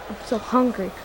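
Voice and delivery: ordinary talk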